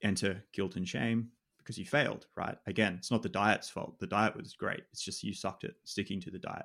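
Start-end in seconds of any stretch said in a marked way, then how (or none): 2.7-6.7 thick, heavy, extreme mocking sarcasm. Speaker explaining why people feel guilt after quitting diets, extremely sarcastic. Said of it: "That's extremely sarcastic".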